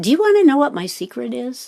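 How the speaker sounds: put-on confiding, secretive, leaning-in conspiratorial tone. Retelling a lecture moment where the speaker leans toward the audience: Krishnamurti's conspiratorial tone. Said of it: "with a sort of conspiratorial tone".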